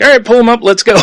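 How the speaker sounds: excited, upbeat, high, loud, cheerful call.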